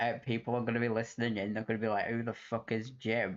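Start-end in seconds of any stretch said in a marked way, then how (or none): none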